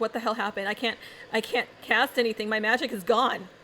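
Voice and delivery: panicked, panicking character voice. Voicing a panicking magic user in the city: panicking magic user. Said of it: "people are panicking".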